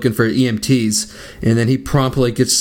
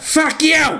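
put-on Boston accent, very high. Quoting a man whose accent the speakers praise, imitating a Boston accent. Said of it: "He has a better Boston accent than Affleck".

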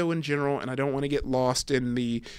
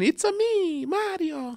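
cartoon Italian accent, much higher pitch, slower. Explaining how a video game character talks, speaker does a Mario voice. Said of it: "Is he Italian?".

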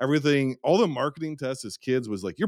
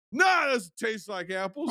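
put-on very high, snotty, bratty kid voice with attitude; 9 semitones higher than usual. Retelling an old cereal commercial, imitating a kid with attitude. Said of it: "how much attitude those kids".

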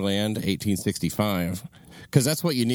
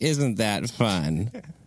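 upper-crust Minnesota Midwestern mother voice. Recalling what she would say all the time at a park, in a waspy Minnesota mom voice. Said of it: "it's like a waspy kind of sound".

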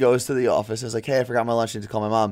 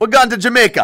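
shrill, booming, loud, high put-on Jamaican accent; 10 semitones higher, 9 dB louder than usual. Showing another person how to say it, the speaker uses a Jamaican accent. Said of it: "Do your accent".

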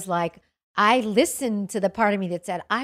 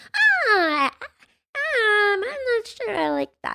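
put-on little kid voice, higher pitched; 12 semitones higher than usual. Retelling a voice done on the playground since childhood: childhood put-on little character voice. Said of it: "the voice I'd been doing my whole life".

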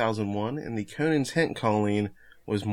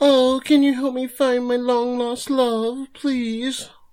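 very high, loud, shrill, mocking old-woman voice; 14 semitones higher, 8 dB louder than usual. Retelling a scene where a character mocks an older woman caller, mocking older woman's voice. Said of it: "he's mocking her".

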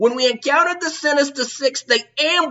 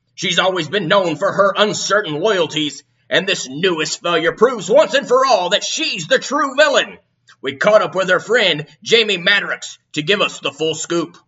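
news-break announcer delivery, like a bulletin; 6 semitones lower than usual. Delivering a news break in a listener's audio campaign: J. Jonah Jameson voice. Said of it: "So he sent in one from J. Jonah Jameson".

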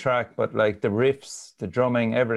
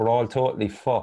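plain

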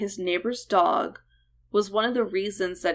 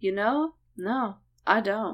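oddly sweet, mild-mannered, weirdly sweet voice. Retelling the arrest, Berkowitz answers the detective holding a gun: imitating Berkowitz's soft, sweet voice. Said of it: "in this very, like, soft, almost sweet voice".

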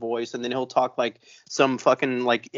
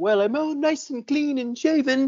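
put-on English accent, pitched very high; 13 semitones higher than usual. Retelling a story about a bearded man, quoting him in an English accent. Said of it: "why did you just do an English accent?".

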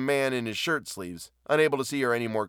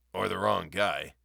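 muttered under the breath, lower voice; 4 semitones lower, 3 dB quieter than usual. A man closing his door on a woman adds an aside; in a lower voice. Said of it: "added in a lower voice".

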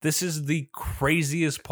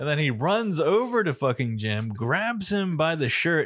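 ordinary delivery

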